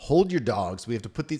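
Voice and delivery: ordinary talk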